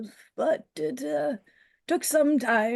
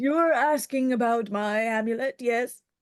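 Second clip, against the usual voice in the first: put-on elderly gentleman voice. Another voice speaks through the character Jinx, older gentleman voice. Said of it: "the older gentleman voice coming out of Jinx".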